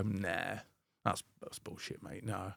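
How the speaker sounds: very quiet, slow, low, sarcastic, derogatory dismissal. Describing a firm authoritarian teaching approach, acting out a mock sarcastic put-down. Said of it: "quite sarcastic and derogatory".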